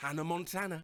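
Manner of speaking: ordinary delivery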